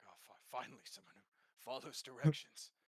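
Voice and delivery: muttered aside, fully voiced. Voicing a character who reacts to a saluting soldier: muttering under his breath. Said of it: "under his breath, he's kind of like".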